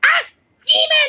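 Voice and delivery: very high-pitched alien scream. Describing the grunts, the speaker mimics their cry: Grunt scream. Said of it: "they scream and say".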